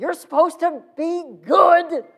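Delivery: very loud, very high, shrill, upset scolding tone. Retelling how a man scolded the group, imitating someone upset. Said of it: "you could tell that he's upset".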